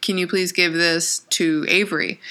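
ordinary talk

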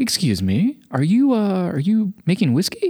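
slow, lilting, courteous, well-spoken polite tone. Retelling how a tattooed stranger spoke to him: imitating a polite, eloquent man. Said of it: "That's the way he talked".

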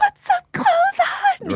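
high-pitched screaming.

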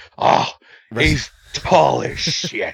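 very slow drawl, every word stretched way out. Joking about who booked the match, doing Vince McMahon impression. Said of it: "young rock sounding Vince".

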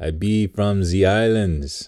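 terrible, hammed-up put-on Jamaican accent. A dad retells joking with his son in the backseat, in a bad jamaican accent. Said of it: "I would talk like a Jamaican".

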